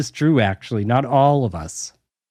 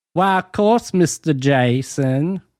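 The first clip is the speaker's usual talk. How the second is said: put-on Southern belle debutante accent. Asked for more of the Southern debutante accent, answering in put-on Southern belle accent. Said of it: "That's a Southern Belle".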